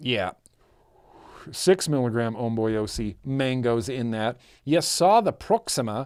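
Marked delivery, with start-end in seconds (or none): 4.6-6.1 put-on Australian accent. Showing the audience a setup, in an Australian accent. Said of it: "I have to say that with an Australian accent".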